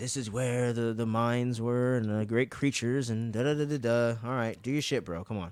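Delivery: acted, dry, sarcastic, dismissive tour-guide style patter. Retelling a scene where she shows him the mines: imitating sarcastic tone. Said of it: "she's all sarcastic as shit".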